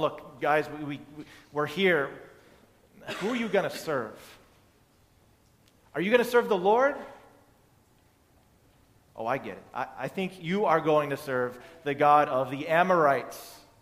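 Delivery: put-on sarcastic tone. Acting out a challenge to the people: imitating a sarcastic tone. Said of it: "a little bit of sarcasm in there".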